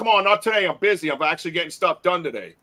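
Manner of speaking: acted-out, put-on loud shouting. Retelling being growled at in his yard, yelling out to the woods. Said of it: "I'm yelling out to the woods".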